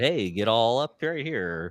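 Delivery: normal talking voice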